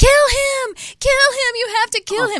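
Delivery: very high, loud, repeated screaming. Retelling screaming at a man carrying a kitten away: imitating own screaming. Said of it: "screaming at him".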